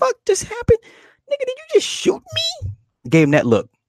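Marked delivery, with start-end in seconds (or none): 0.0-2.7 very high, acted, shocked, stunned disbelief. Retelling a movie scene, imitating Brandon's stunned disbelief. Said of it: "And Brandon's like".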